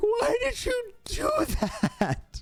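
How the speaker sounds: mock inconsolable weeping, very high, swooping wail. Retelling crying after a tooth was pulled: imitating inconsolable weeping. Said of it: "crying, like, inconsolably, just weeping".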